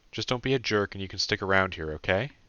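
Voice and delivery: ordinary talk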